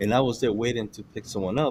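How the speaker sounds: ordinary talk, nothing marked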